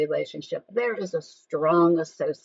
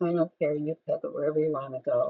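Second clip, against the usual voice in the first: level, uninflected, very low monotone drone; 3 semitones lower, 4 dB quieter than usual. Speaker demonstrating a reply to a spouse's dinner question, very low, very flat. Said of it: "very low, very flat".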